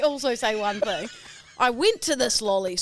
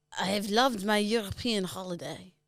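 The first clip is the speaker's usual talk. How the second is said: improvised put-on French accent; 2 semitones lower, 6 dB quieter than usual. Asked by the other speaker to do the French again, in a French accent. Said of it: "Go the French".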